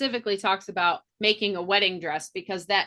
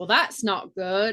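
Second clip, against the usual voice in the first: put-on London cockney English accent. Retelling a character's line in a cockney english accent. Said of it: "straight up, like, a Cockney British".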